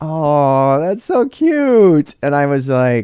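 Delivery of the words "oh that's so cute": mock very slow, high condescending coo, long "oh". Retelling own past remark to a new learner: condescending coo. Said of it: "the most condescending thing anyone's ever said".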